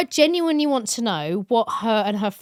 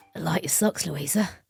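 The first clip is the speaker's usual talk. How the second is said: mock creepy voice, lower and quieter; 5 semitones lower, 6 dB quieter than usual. Reading a viewer comment aloud: put-on pervy voice. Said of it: "Said in pervy voice".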